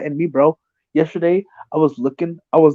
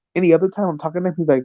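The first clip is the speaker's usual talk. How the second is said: ordinary talk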